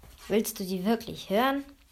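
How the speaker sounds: plain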